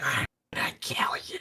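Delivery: breathy, very soft whisper, barely voiced. Retelling a ghost kid's threat in a game: imitating a whisper.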